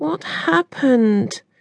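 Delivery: high, hushed half-whisper. Reading a story aloud, the narrator voices a character asking what happened, half-whispered. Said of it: "whispered Ivy".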